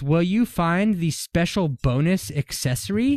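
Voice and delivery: normal talking voice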